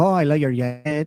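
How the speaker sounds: put-on Colombian accent. Retelling what a woman at a strip club said, imitating a Colombian accent. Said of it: "her accent. She sounded like, uh, Sofia Vergara".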